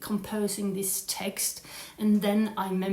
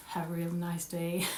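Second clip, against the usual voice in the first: soft, put-on American accent; 3 semitones lower, 5 dB quieter than usual. Redoing the farewell line after slipping into the wrong voice: American accent. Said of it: "American accent".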